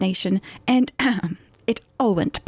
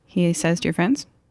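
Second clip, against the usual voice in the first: ordinary talk, nothing marked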